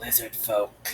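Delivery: low, rasping lizard-man creature voice. Game master voicing a scaly figure who looks at the player: raspy voice. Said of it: "with a raspy voice".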